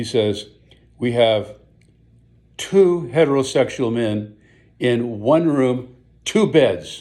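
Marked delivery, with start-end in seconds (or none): 1.0-7.0 loud, slow, deliberate, louder than needed. Retelling how a man answered a college girl at the front desk, in a too-loud voice. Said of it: "in a loud voice, louder than absolutely necessary".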